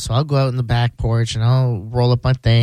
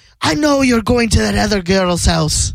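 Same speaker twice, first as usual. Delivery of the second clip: put-on full Irish accent, very high; 10 semitones higher than usual. Retelling what an Irish woman says when they argue, imitating an Irish accent. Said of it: "she's like Irish, so it's funny she'll have her whole accent".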